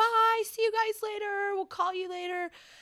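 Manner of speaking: very high yell carrying across distance. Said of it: "Sanjaya like starts yelling at us like".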